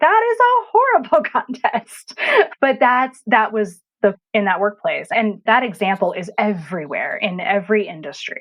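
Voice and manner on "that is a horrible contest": disbelief through laughter. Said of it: "And I'm like".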